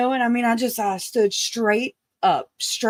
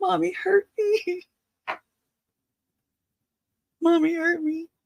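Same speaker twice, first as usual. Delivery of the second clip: put-on high, hurt little boy's whimpering cry; 6 semitones higher, 3 dB quieter than usual. Retelling what your nephew said to his aunt, imitating a nephew's whimpering voice. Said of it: "he's like in a whimpering voice".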